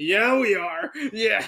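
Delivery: mock, very slow, drawn-out, groovy, hyped delivery. Imitating the co-host's reply back at him: imitating a hyped-up answer. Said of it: "that sounded so hype in your part".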